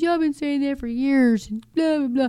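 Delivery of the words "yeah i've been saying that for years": put-on laughing while talking, higher pitch. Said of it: "kinda laughing".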